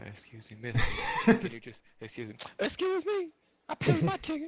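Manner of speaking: imitated loud talker. Retelling a rough movie theater trip, imitating a loud moviegoer. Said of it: "that's the voice I heard this whole time".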